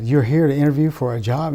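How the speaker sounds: put-on heavy, thick, throaty, guttural German accent. Retelling what a german lady at the door asked him, thick guttural german accent. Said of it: "with a really thick guttural accent".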